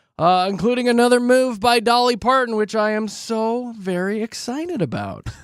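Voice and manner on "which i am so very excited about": dry, slow, soft sarcastic aside. Wrapping up the show, the host previews the upcoming news: sarcastic. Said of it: "he said sarcastically".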